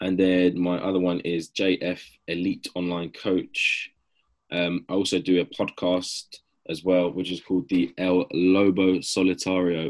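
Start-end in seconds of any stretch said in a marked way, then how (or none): 8.0-9.9 anglicized pronunciation in an English accent. Naming his podcast, saying the Spanish name in an English accent. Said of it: "I'm saying it in an English accent so you guys can understand it better".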